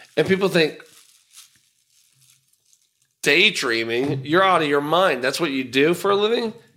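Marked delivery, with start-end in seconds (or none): none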